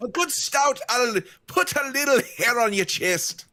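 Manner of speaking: put-on Scottish accent. Playing a character in a tavern in a D and D game: Scottish accent. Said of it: "has chosen to have a Scottish accent in the D and D game".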